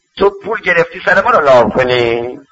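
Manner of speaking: ordinary delivery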